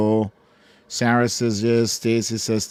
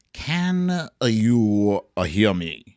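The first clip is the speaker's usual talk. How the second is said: put-on sultry radio DJ voice, drawn-out "you". Asking viewers if they can hear the audio: put-on sexy dj voice. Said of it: "Sexy D J voice is back".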